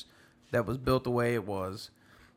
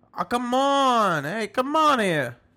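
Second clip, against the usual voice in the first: terrible put-on Jersey accent, very loud and shrill; 11 semitones higher, 9 dB louder than usual. Bantering with another speaker, slipping into a terrible Jersey accent. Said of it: "That was my Jersey accent".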